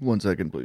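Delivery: words strained, held behind a rising burp. Asking for a moment before giving thoughts: holding in a burp. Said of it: "Manny's working up a burp right now".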